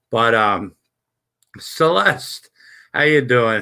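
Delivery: plain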